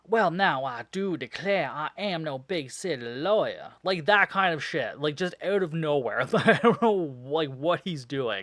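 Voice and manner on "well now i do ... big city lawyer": heavy, slow Southern drawl, laid on thick. Describing a man who suddenly talks differently, in a thick southern accent. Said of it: "very thick southern accent on now".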